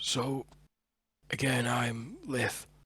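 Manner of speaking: raspy, rasping voice from the throat. Storyteller voicing Liff as he introduces himself to Thorin, Liff's raspy voice. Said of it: "a rasp in his voice".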